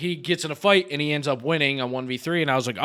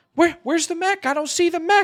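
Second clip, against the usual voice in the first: put-on very high-pitched young boy's voice; 3 dB louder than usual. Retelling a video game match, the speaker quotes Jake's reply: imitating Jake's high voice. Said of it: "his voice is like kind of high pitched".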